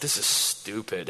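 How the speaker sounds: very quiet mutter under the breath. Retelling comments after being told to sit down: retelling muttering under breath. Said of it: "under my breath, making comments like".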